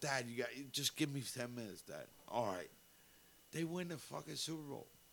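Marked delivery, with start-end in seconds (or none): none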